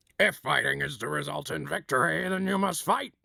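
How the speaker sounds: gruff, rough military soldier voice. Going first before the other person tries theirs: soldier impression. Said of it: "I'm gonna do my soldier impression".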